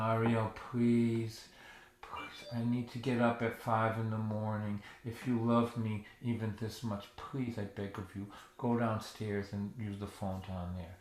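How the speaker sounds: defeated, lifeless, flat monotone. Imagined plea to daughter Ariel about the phone: mock-defeated flat monotone. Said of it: "to speak in a defeated monotone".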